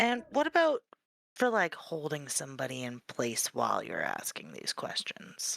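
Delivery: hushed voice. Playing a customer asking a shopkeeper about restraints: lowered voice. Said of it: "he's asking in a lowered voice".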